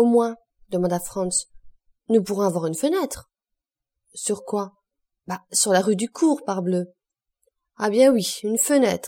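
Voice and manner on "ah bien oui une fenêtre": loud exclaiming. Answering two travellers who hope for a window, exclaiming. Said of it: "s'exclama maître Pastrini".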